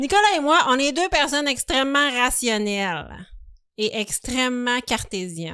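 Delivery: standard broadcast French, announcer-style accent. Podcast host introduces himself and his co-host to listeners in his Radio-Canada voice. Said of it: "je vais prendre ma voix radio-canadienne".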